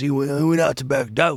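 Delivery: real gruff way of talking. Retelling what a woman kept saying about her husband, real gruff voice. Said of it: "She said just like this. She goes".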